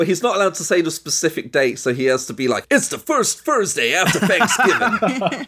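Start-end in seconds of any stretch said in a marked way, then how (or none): 2.7-5.5 high, slow, gruff villain voice. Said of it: "that's my Ramba Ralph voice now".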